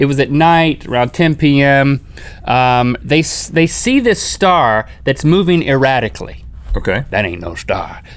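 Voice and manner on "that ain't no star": put-on gruff voice, lower, quieter, faster. Retelling a couple seeing a moving star at night, in a put-on gruff voice.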